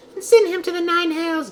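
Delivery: high-pitched, grand put-on character voice.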